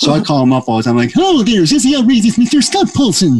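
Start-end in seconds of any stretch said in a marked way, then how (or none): 1.2-3.4 very high-pitched cartoon moose voice. Calling up Scott Paulson's show, speaker talks in his Bullwinkle voice. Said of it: "a perfect Bullwinkle".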